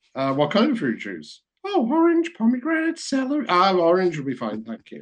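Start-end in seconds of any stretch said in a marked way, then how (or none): 1.6-3.4 very high, squeaky cartoon voice. Retelling what the man offering drinks answered, in a Mickey Mouse voice. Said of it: "He really sounded like Mickey Mouse".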